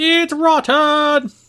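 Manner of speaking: very high, shrill, very loud shout. Imagining Gordon Ramsay looking at the seafood: imitating a shout.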